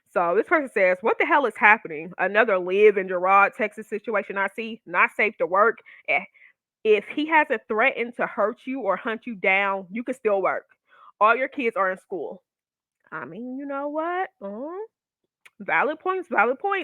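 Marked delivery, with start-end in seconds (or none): none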